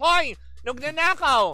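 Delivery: shouting, high-pitched and loud.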